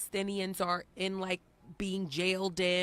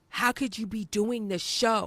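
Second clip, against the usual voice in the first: mock threatening, menacing tone; 3 semitones higher, 4 dB louder than usual. Retelling a call from a stranger about the show, imitating a threatening caller. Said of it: "it was a very threatening tone".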